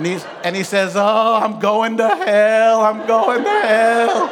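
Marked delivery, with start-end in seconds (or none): 1.0-4.3 loud, acted sobbing, wailing lament. Retelling how a man reacted after being yelled at, imitating a man wailing. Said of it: "he begins to wail and cry".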